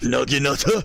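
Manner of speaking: over-the-top put-on Japanese accent. Speaker playing a strategy game says a unit name; outrageous Japanese accent. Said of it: "my outrageously Japanese accent".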